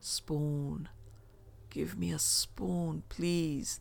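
very slow, soft, croaking voice, pleading tone. A man asks Kaz and the narrator for a spoon, croaking. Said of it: "the man croaked".

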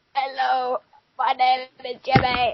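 put-on voice of an elderly man. Teasing someone in the room, imitating Jimmy as an old man. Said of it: "He's like an old man".

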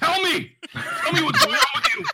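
screaming, shrill, very high and very loud. Playing a character screaming at a cow in a game: screaming at the cow. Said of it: "I start screaming at the cow".

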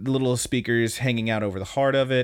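ordinary delivery

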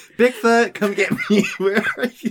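frantic, desperate, shrill, loud calling out. Retelling a man banging wood in the woods: imitating desperate calling. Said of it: "he's getting so desperate".

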